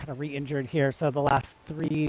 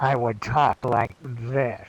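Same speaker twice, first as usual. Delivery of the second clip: muffled through cupped hands, much lower; 3 semitones lower, 4 dB louder than usual. Describing an audiobook where a character wore a mask; muffled through cupped hands. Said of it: "cup my hands over my face".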